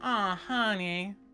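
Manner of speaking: very high, put-on Southern drawl. Joking about needing a Southern accent: put-on Southern accent. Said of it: "do I need to have, like, a southerly accent?".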